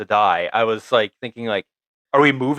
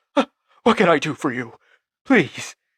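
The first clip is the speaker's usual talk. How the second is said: timid, eager-to-please, meek voice pitched up; 5 semitones higher than usual. Retelling a scene, imitating Fisk acting meek. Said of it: "Fisk acts so meek in this".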